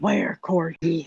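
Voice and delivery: loudly whispered stage whisper. [name] leans over toward Lena and asks her something, loud whisper. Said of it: "kind of loudly whispers to her".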